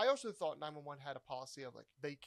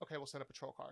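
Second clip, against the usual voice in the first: ordinary talk, nothing marked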